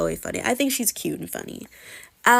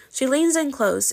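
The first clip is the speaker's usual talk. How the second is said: plain reading voice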